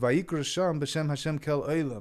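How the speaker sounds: ordinary talk, nothing marked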